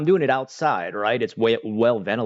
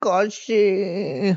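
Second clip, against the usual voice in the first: put-on very high, girly, girlish voice; 10 semitones higher than usual. Showing how to say the Japanese word, imitating how girls say it. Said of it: "You gotta, like, look down at your, your feet".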